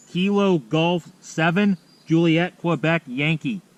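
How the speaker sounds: slow, loud, careful spelling-out.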